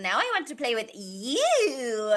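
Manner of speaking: put-on silly, creepy sing-song baby voice, drawn-out "you". Quoting a favorite line delivery from a character, in a silly little evil baby voice. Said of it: "his silly little baby evil baby voice".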